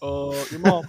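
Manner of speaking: halting stutter, stalling on drawn-out uh. Shouting up from the canopy with the Obama stutter. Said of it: "with the Obama stutter".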